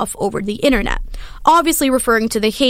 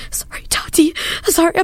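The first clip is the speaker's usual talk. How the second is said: mimicked sobbing with heavy breaths, much higher; 6 semitones higher than usual. Retelling a man's video response, imitating someone crying. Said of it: "He's crying and breathing heavily".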